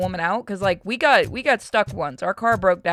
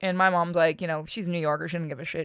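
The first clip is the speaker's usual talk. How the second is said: ordinary talk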